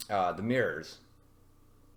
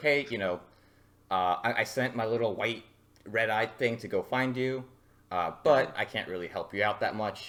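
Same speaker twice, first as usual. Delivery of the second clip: usual speaking voice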